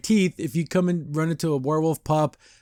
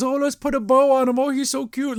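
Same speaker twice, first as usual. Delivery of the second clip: put-on high, fussing, doting, crazy old-lady voice; 10 semitones higher than usual. Acting out two old ladies greeting the family heir, in a crazy old lady voice. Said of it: "they're in their old old lady thing".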